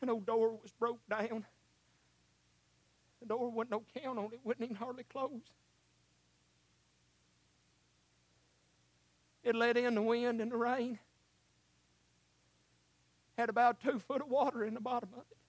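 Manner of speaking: fighting back emotion. Telling an old family story, the speaker apologizes and goes on, holding back emotion. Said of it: "I'm trying not to get emotional".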